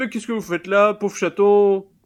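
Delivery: high-pitched little-lady voice. Narrating a little lady opening her door to meowing cats, imitating a little lady. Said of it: "une petite dame euh, fait bah".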